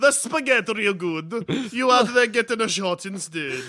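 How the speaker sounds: put-on Italian accent. Voicing Alfred speaking to Master Bruce: Italian Alfred voice. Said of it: "Italian Alfred".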